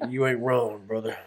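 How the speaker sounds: put-on low voice. Retelling a man's reply from an earlier conversation, imitating a deep voice. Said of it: "he got deep ass voice".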